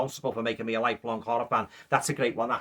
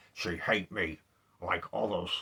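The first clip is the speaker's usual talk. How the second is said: low, soft, hushed monster voice; 5 semitones lower, 6 dB quieter than usual. Describing a film's rejection scene, quoting the monster: Boris Karloff monster voice. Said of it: "he basically goes like".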